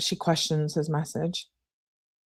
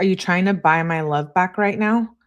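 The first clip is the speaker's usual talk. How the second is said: ordinary talk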